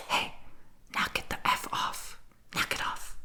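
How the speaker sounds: hushed, urgent, under-the-breath whisper. Acting out someone breaking up a fight, whispered. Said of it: "sorry I had to whisper, but I have to do it quietly".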